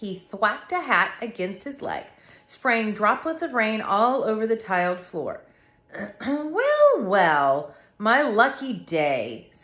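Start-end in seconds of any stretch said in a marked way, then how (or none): 6.3-9.5 strange, croaky voice, very slow and drawn out. Reading a story aloud, a man comes in shaking rain off his hat: Mister Fibbley's odd croaky voice. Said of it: "said Mister Fibbley in the odd, croaky voice".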